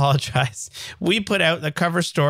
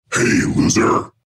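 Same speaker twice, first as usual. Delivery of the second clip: put-on spooky, eerie voice. Asked by the other host to read the next title in a spooky voice. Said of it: "You want to say it in your spooky voice?".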